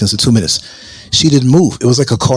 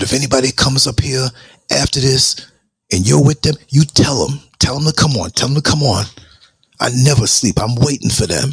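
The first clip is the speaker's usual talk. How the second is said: play-acted furious, defiant, angry delivery. Speaker retells what he said to someone back then, retelling an angry threat. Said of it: "but I was I was angry".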